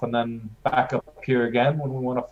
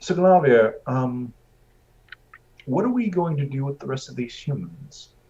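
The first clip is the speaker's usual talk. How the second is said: whispering in a put-on voice. Playing a character who turns to a companion mid-scene: whisper. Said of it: "turn to Glarvir and whisper".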